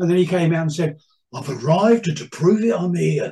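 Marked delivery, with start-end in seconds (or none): 1.3-3.3 radio showman announcer voice, father-like. Retelling his father's line heard on the radio: impression of his dad. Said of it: "thank you for the impression".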